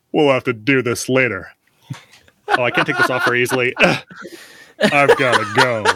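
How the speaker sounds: put-on deep deadpan voice. Voicing a tiny starfish character leaving a room: Patrick Warburton voice. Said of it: "Your voice for your starfish sounds like Patrick Warburton".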